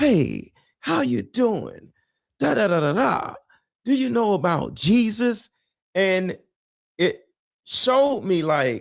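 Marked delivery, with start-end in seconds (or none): 0.0-5.5 high, strangely overly nice pastor voice. Imitating how pastors talk to a little girl: a pastor's strange niceness. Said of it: "it's always this mannerism of".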